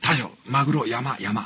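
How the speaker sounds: tiny, small, slow voice, words spaced out. Imitating a follower's young male assistant, in a tiny voice. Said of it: "ちっちゃい声で".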